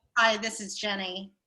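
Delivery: put-on professional, businesslike phone voice. Recalling answering a call at work: put-on work phone voice. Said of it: "your work phone voice".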